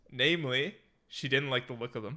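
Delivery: ordinary delivery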